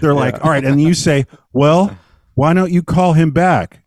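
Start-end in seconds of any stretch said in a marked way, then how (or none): 1.5-3.7 put-on deadpan, louder, slower. Describing an actor rehearsing lines with a roommate, imitating deadpan line reading. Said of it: "because it's so deadpan".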